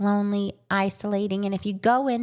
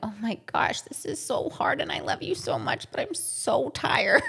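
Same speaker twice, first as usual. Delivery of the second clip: mock weepy, teary, crying voice; 4 semitones higher, 3 dB quieter than usual. Acting out a parent holding a baby at night: imitating someone crying. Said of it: "Everyone is crying and holding their baby".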